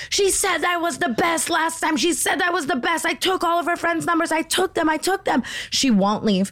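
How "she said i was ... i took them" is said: high, mock screaming. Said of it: "she's just screaming at Chris".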